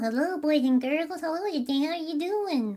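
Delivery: eerie, squeaky, very high-pitched puppet voice. Voicing what a worm on a string would say: creepy high-pitched voice. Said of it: "I can do like a really high pitched voice. It's kind of creepy".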